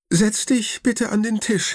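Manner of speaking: quavering, trembling, very high-pitched voice. Narrator reading Grandma telling Leon to sit at the table, with a trembling voice. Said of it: "sagt Oma mit zitternder Stimme".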